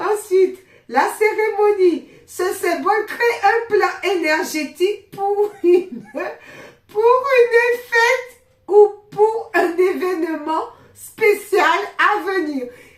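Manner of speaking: fit of giggles. Reading a symbol's meaning aloud, caught in a fit of giggles. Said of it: "un fou rire, ça arrive".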